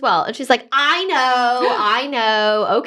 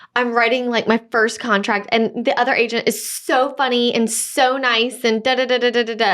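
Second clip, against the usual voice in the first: plain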